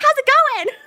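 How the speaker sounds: play-acted very high, very loud big voice. Retelling a dad greeting her on a call: imitating a big smiling greeting. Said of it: "huge smile on his face".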